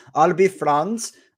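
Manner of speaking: bad put-on Austrian accent. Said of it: "that's an awful accent".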